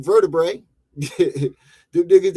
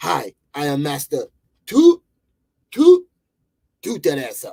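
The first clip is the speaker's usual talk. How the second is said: put-on, swooping martial arts master voice; 3 semitones lower than usual. Joking about a kung fu master, voicing the sensei: put-on kung fu master voice. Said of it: "his sensei name is".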